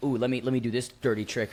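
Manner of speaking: normal talking voice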